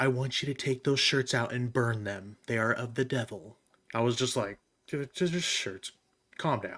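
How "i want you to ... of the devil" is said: put-on grave, serious, no-nonsense, stern grandmother voice. Recalling getting in trouble as a kid, the speaker imitates grandma's serious voice. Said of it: "in her most serious grandma voice".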